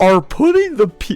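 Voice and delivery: mocking impression voice. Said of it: "You always do the neck".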